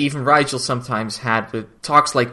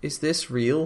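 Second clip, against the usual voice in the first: mock fearful, broken, upset voice, pitched up; 5 semitones higher, 4 dB quieter than usual. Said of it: "in a broken voice".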